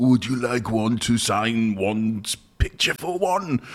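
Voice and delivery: regal put-on impression voice. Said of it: "That's an impression of the king".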